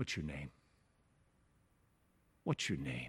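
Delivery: very low, hushed, soft, tender and compassionate voice. Explaining how he voices the question to the possessed man: humane, compassionate. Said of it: "In the most humane way".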